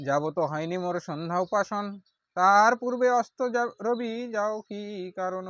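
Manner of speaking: loud, high, wrathful tone.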